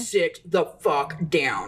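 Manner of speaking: very firm, steady, level voice. Recounting what she told her in the hallway: reenacting a firm, unyelled order. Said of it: "I didn't yell it. I said it very firm. Like".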